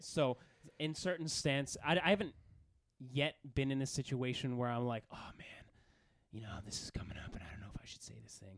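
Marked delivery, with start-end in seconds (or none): 5.1-8.6 hushed, rushed, breathy whisper in superhero voice. Describing hesitating over whether to say something at the gym, in a Batman voice. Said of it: "I use my Batman voice there".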